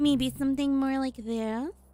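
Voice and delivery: small, high little voice. Trying out voices for the character Wendy, in a tiny Wendy voice. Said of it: "we're gonna go with a tiny voice".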